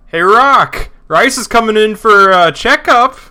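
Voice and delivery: high, very loud, drawn-out hollering call. Voicing a character in the back room: calling out loudly. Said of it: "call out".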